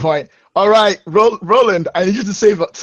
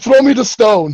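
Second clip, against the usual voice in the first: put-on shouting, higher; 5 semitones higher, 4 dB louder than usual. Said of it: "I'm gonna yell at the other".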